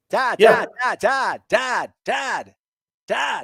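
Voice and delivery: very slow, high calling. Offering a quick impression to the other speaker: Kuiper impression. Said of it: "You want me to do my, my Kuiper?".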